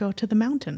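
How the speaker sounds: calm, steady, unbothered delivery. Recounting the answer to an angry prayer, retelling a calm reply. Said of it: "he just calmly replied to me".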